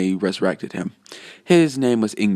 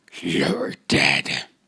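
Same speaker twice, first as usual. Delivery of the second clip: very low, demon-like voice; 8 semitones lower than usual. Acting out a character threatening a villain, in a demonic voice. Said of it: "I tried to do a demonic voice".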